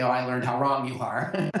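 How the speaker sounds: sarcastic jab with a laugh. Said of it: "let's not be sarcastic and say".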